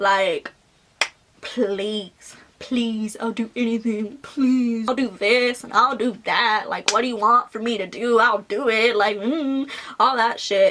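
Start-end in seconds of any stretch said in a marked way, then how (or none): 1.4-8.9 mock drunken pleading voice. Retelling how a drunk ex begged to get back together: imitating someone drunkenly begging. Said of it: "he was begging to get back with me".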